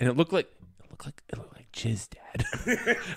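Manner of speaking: hushed whisper under the breath, aside. Retelling what another person told him, imitating someone whispering. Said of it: "And he like whispers".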